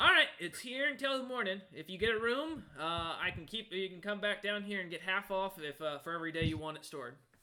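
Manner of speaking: high, small creature's kobold voice. Voicing a small kobold stable keeper greeting a traveler: voicing a small kobold. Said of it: "And he goes".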